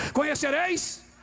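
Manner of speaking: shouted. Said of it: "Eu vou gritar".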